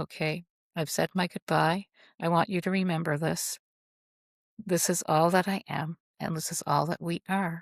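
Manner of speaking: ordinary delivery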